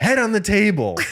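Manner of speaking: loud yell. Retelling a dad at a restaurant yelling at his kids: imitating a dad yelling. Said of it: "the dad is, like, yelling at the kids".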